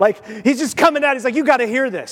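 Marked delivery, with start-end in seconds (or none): 1.3-2.1 mock excited, urgent, bursting-with-news delivery. Retelling a bible passage, acting out the angel running out of the sanctuary, imitating excitement. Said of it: "he's so excited".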